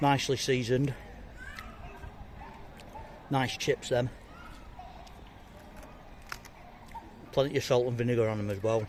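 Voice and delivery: speaking with mouth full, chewing. Tasting chips on camera for a review, talking with mouth full. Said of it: "He says with his mouth full".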